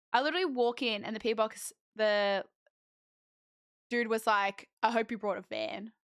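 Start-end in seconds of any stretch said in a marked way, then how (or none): 4.8-5.9 put-on, mock-joking tone. Retelling what a guy said as the speaker walked in, imitating a joking remark. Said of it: "like jokingly".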